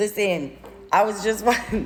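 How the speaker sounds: words broken up by laughing throughout. Speaker starts telling listeners about a show, laughing while talking. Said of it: "Sorry, I'm laughing because I'm a dork".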